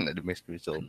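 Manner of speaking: soft, laughing delivery.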